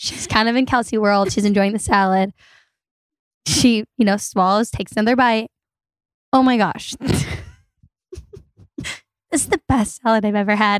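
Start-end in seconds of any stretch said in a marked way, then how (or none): 6.3-10.8 put-on muttering under the breath. Retelling a meal, imitating Kelsey talking to herself: muttering under breath. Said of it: "This is being said under her breath".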